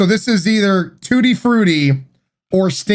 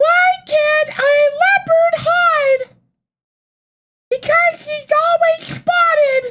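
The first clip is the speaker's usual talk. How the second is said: put-on squeaky, very high babyish voice. Told to read a joke aloud in a baby voice. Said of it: "Read the joke in a baby voice".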